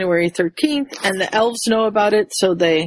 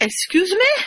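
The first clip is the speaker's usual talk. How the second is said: very high, poorly done, attempted French accent; 12 semitones higher than usual. Acting out a character's retort in a story, attempted French accent. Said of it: "I was trying for the French accent".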